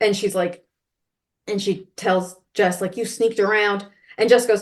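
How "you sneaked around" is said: ordinary talk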